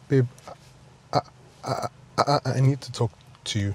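stumbling, stuttering, stammering speech. Speaker addressing their partner, stuttering. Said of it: "babe, you're stuttering".

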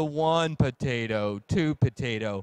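very slow, deliberate, dropped delivery. Demonstrating speaking rate by counting potatoes, say it very slow. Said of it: "So if we're slowing it down".

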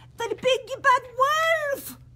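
very high shriek, stretching out wolf. The second pig, at home, suddenly spots the big bad wolf; shrieking. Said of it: "Shrieked the pig".

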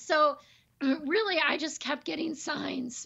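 hoarse, high-pitched voice starting to give out. Explaining the decision to move, voice giving out. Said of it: "there goes my voice".

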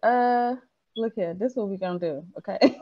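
ordinary delivery

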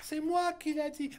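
high, soft, stupid-sounding voice.

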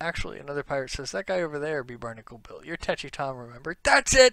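normal talking voice

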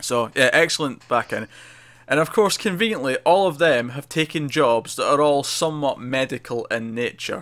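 ordinary delivery

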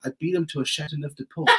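put-on English accent. Showing friends a line, in an english accent. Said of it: "I can have like an English accent".

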